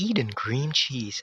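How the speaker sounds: slow, drawn-out commercial voiceover voice. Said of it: "Ganun yung cream cheese".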